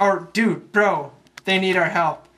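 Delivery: ordinary delivery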